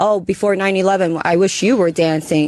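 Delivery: ordinary talk, nothing marked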